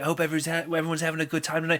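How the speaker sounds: put-on super strong French accent. Retelling what a french band member said to the concert crowd, super french accent. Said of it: "He's a French accent, super French accent".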